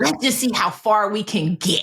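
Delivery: plain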